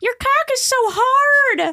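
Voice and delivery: squeaky, very high, silly puppet voice. Describing a girl who uses a voice for her puppet, imitating that puppet voice. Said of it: "she uses like a voice".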